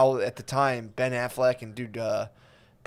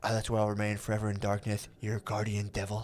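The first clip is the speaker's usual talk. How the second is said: breathy put-on superhero voice, quieter; 3 semitones lower, 8 dB quieter than usual. Quoting the ending line of the Daredevil movie: breathy Daredevil voice. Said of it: "like a breathy".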